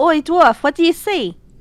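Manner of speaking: muffled-distance yelling. Playing a character, yelling through the door to the dwarf: yelling through a door. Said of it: "I'm yelling through the door".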